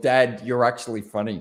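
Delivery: ordinary delivery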